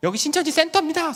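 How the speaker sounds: very high, shrill yelled shout. Retelling a one-person protest in front of the center: imitating own shouting. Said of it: "소리 지르는 거예요".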